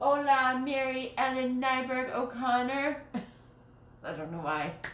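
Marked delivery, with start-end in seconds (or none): 0.0-3.0 higher, playful tone. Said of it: "I have to say it like that".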